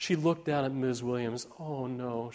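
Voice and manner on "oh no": murmured softly. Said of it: "she murmured".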